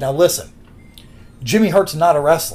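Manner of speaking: plain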